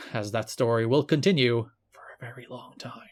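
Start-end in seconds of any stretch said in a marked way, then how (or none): 1.9-3.1 dark, ominous, foreboding, foreshadowing tone. Recapping a match storyline with a co-host, saying it ominously. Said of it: "I say, ominously".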